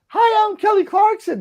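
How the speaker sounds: very high, tiny, squeaky little-guy character voice. Recalling a radio show bit: imitating Eric the Midget. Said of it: "Eric the Midget".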